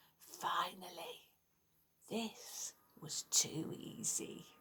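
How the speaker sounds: chilling, cold, deep, hissed whisper. Reading a story aloud, the figure grabbing Dylan's cloak speaks in a cold, deep hissing voice. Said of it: "A cold, deep voice hissed".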